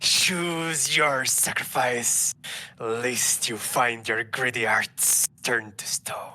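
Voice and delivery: slow, drawn-out snake voice. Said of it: "Can you do a snake voice?".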